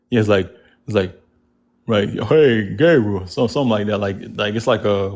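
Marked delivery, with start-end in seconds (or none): 2.0-3.2 deep, strong put-on voice. Asked by the other speaker to do it, giving a God's voice impression. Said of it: "your impression of God's voice for me".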